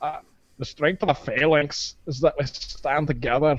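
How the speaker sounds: put-on Scottish accent. Imitating a film king giving a speech about the phalanx: Leonidas with a Scottish accent. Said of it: "are you Scottish?".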